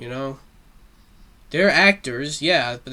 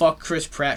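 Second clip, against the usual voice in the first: normal talking voice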